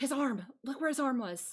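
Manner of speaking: whispering. Voicing a character who leans in close to a player's ear: whispering. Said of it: "as if she's gonna whisper in your ear".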